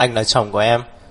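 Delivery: ordinary delivery, nothing marked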